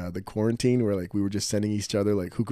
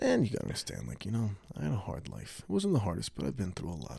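very quiet, soft, hushed, low-key speaking voice; 7 dB quieter than usual. Showing another person how a man kind of talks, do a very quiet impression. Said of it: "He kind of talks like this. It's very quiet".

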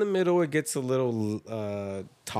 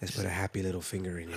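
put-on smooth, sexy voice, lower and quieter; 4 semitones lower, 7 dB quieter than usual. Imitating how Bob Ross would talk to ladies: sexy Bob Ross voice. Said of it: "a very sexy voice to talk to ladies".

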